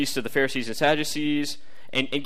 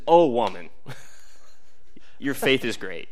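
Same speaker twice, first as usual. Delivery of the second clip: much lower, mock-laughing grinning delivery with belly laugh; 2 semitones lower than usual. Speaker retells his reply to a woman who threw it back, retelling a laughing line. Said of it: "with a belly laugh and a grin".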